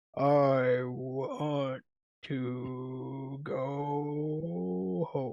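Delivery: hushed, soft turtle voice with "go" stretched out. Recalling a one-shot game, the speaker does Plubo the turtle voice. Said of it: "talked like that the entire one shot".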